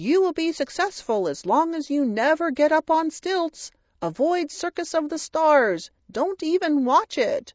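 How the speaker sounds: tiny puppet voice, pitched very high. Imagining a psychic's puppet giving a prediction, in a little puppet voice. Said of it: "a little puppet voice say".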